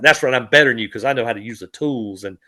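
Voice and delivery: put-on gloating tone. Retelling how an AI artist cussed people out, imitating someone gloating. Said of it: "you could hear the gloating in his voice".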